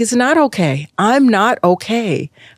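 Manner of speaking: play-acted, high screaming, coming apart. A mother retells her breakdown in front of her child: retelling a scream. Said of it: "I just was screaming like".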